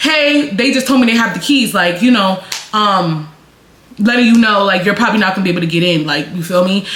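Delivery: normal talking voice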